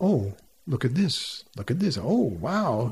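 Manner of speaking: expressive sing-song voice, swooping up-and-down inflection. Demonstrating how to read a sentence aloud, expressive up-and-down inflection. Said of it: "put an inflection in your voice so that it goes up and down".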